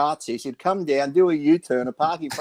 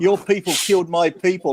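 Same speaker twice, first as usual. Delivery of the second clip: mock yelling, much higher pitch; 3 semitones higher than usual. Telling a firehouse story, the speaker reenacts Victor yelling at Gary. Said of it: "yelling at him".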